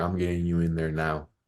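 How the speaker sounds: ordinary delivery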